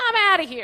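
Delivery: high, loud angry yell. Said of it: "And I was like".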